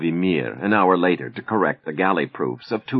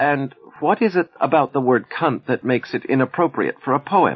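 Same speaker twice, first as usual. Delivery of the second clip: innocent, pitched-up voice; 8 semitones higher than usual. Aida replies to the editor's suggestion about her poem: asked innocently. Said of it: "she asked innocently".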